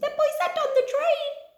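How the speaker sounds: very high-pitched, silly, daft squeaky voice. Speaker repeats a sentence for listeners to copy: silly squeaky voice. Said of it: "Say it in a really silly squeaky voice".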